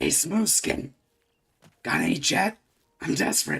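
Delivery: put-on monster character voice. Imitating a video game character on request, Fallout 3 ghoul voice. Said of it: "I can get around like Fallout three Ghoul".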